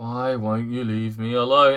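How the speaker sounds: put-on very low, flat, bored monotone. Quoting an actor's first line in the film: imitating a bored delivery. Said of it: "you sound bored out of your fucking mind".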